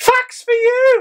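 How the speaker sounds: very high ridiculous voice. Trying out saying it high to hear how it comes out, high voice. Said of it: "So if I say it high now".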